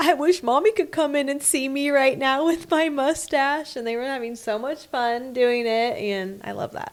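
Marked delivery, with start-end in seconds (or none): 0.0-3.8 put-on laughing while talking, higher pitch. Retelling a child's words said while cracking up: imitating someone laughing while talking. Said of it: "he was cracking up".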